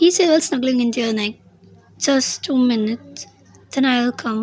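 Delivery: plain reading voice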